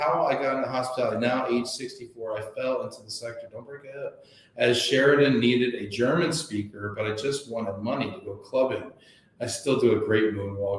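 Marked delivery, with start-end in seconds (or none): none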